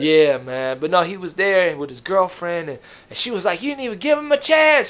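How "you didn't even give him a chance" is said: very high-pitched, shrieking, yelled outburst. Retelling how the uncle's girlfriend defended the performer: imitating someone yelling. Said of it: "She started yelling".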